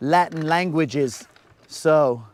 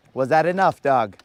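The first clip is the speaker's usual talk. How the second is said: ordinary talk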